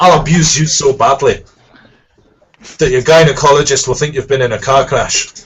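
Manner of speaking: put-on Scottish accent. Asked to repeat a line for the listeners, he does a Scottish accent. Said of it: "I'll do it in a Scottish accent".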